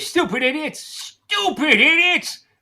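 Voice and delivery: fuming, worked-up, heated angry rant. Speaking to George in the scene: heated, angry Mr. Gower. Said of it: "you sound like you're getting heated".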